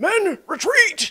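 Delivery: shrill, high, forceful voice. Describing a crow-faced creature's call, the speaker sounds like a general. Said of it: "what sounds like a general going".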